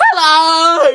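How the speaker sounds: dreadful, very high, stretched, drawn-out squeaky voice. Greeting a video, copying how Michael Rowan says hello: dreadful Michael Rowan impression. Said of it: "that was a dreadful impression".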